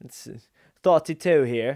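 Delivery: loud, very bad put-on British accent. In a video, the host tries saying a number in a bad British accent. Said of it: "That's my that's my British accent".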